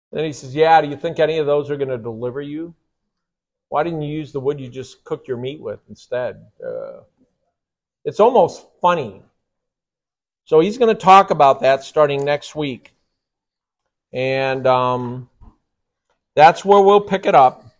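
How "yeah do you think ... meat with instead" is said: play-acted, dry, sarcastic, needling mocking tone. Retelling how God mocks idol makers: acting out a sarcastic God. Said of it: "He's being sarcastic".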